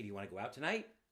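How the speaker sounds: rising pitch on "tonight". Teaching inflection with an example question, rising pitch on tonight. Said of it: "when we up pitch at the end of a sentence, we do it often with a question".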